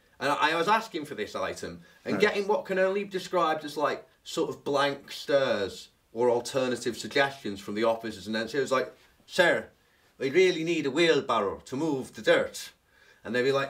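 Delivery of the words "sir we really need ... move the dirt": imitated Irish accent, put-on. Retelling asking officers for a wheelbarrow, in a put-on Irish accent. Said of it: "you tried Irish accents".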